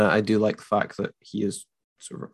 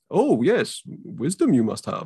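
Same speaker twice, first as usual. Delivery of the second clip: high, sing-song, drawn-out wise-master voice, wandering pitch; 6 semitones higher than usual. Retelling how the character answers, with the weird speech pattern: Yoda voice. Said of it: "he immediately falls back to, like".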